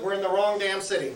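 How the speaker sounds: normal talking voice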